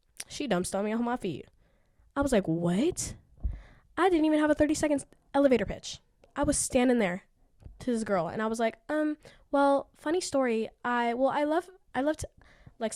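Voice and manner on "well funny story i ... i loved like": put-on stutter, higher and slower. Recalling being asked about his passion by a girl, retelling own stuttering. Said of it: "stuttering like a goddamn stupid ass".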